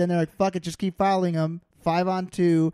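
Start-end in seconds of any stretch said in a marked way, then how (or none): none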